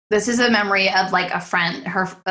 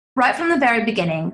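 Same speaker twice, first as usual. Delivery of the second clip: fake British accent, tried out; 4 semitones higher than usual. Speaker decides to try a line in a put-on British accent. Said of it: "should I do a British accent? Let's see how it goes".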